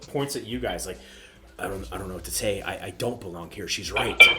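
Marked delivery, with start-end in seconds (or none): 1.6-4.2 low, frightened, desperate stumbling stammer. Zordran pops his collar and points at the group, desperate and scared. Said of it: "he looks so just like desperate and like scared".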